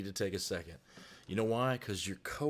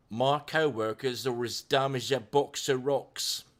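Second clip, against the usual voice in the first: put-on loud, slow Cockney accent; 3 semitones higher, 6 dB louder than usual. Reading out a viewer's chat comment: [name] in a Cockney accent. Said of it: "A bit of a Cockney accent".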